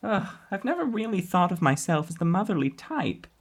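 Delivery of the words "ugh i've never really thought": plain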